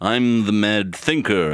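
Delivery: put-on old-fashioned serious voice. Describing a cartoon's cast to a friend, you imitate its characters in a serious 1960s voice. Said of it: "everyone has this sort of 1960s voice".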